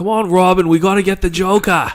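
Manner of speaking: put-on shouted Boston accent. Imagine Ben Affleck's Batman talking to Robin, as Ben Affleck as Batman, Boston accent. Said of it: "let him do a Boston accent as".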